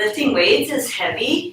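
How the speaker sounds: rising uptalk lilt ending on heavy. Illustrating millennial habit of ending things in a question: question-like rise on 'heavy'. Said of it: "it's like ending things in a question".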